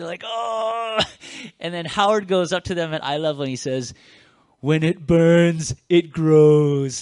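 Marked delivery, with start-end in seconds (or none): 4.6-7.0 booming, drawn-out, bad Austrian accent, slow. Quoting a line to people struggling with a weight, horrible Arnold Schwarzenegger Austrian accent. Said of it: "That was a horrible Arnold Schwarzenegger impression".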